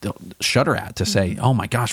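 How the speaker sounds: usual speaking voice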